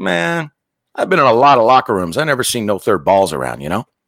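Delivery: normal talking voice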